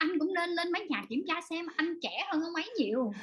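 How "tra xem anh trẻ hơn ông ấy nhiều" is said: ordinary talk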